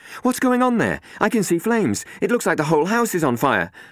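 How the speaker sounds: alarmed, urgent calling out, very high-pitched and loud. A woman on the phone sees flames at the house, urgent and loud. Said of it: "urgent and loud".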